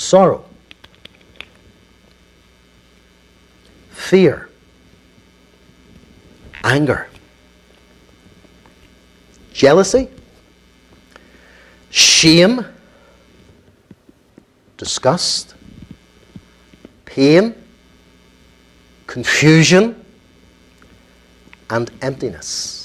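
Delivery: unhurried, deliberate, slow delivery. Speaker names a list for the audience to reflect on, slow and deliberate. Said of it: "Let me say them just slowly".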